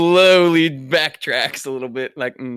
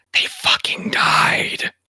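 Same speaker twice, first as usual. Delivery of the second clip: hushed whisper, barely voiced. Narrating Wilbur leaning over to another character, the speaker whispers as Wilbur. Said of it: "just and just whisper".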